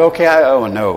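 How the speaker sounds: usual speaking voice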